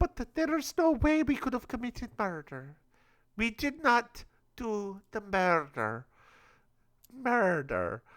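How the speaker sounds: put-on Swedish accent. Named as one of the top suspects, speaking in a mock Swedish accent. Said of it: "What accent is this murder?".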